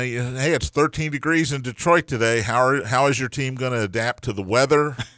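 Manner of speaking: normal talking voice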